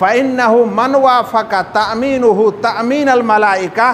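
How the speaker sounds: normal talking voice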